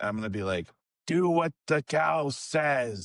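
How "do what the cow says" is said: very slow, dread-laden intoning. A game player speaking into a creature's ear while others talk to it: voice of dread. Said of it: "gonna use a voice of dread".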